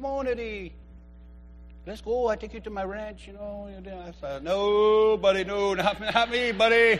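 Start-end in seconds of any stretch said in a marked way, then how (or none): 0.0-3.7 soft, hushed, put-on Mexican accent. Quoting his stepdad, who has property in Mexico, imitating his Mexican accent. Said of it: "He has that accent".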